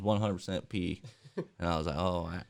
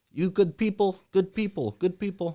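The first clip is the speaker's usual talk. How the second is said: very high-pitched, loud, put-on Arabic accent; 12 semitones higher, 6 dB louder than usual. Retelling what a driver said before offering a ride: imitating an arabic accent. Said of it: "and he was Arabic".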